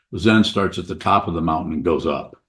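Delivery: normal talking voice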